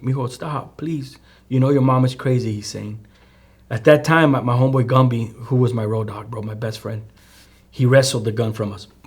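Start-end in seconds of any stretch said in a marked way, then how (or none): 0.0-2.5 mock pleading while crying. Retelling his father begging for his life, imitating crying, begging. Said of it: "and he's begging, crying".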